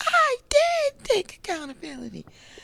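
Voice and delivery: little, very high, squeaky voice with swooping pitch. Retelling what a woman said when upset, imitating Tisha's squeaky voice. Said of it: "That little squeaky voice like mine".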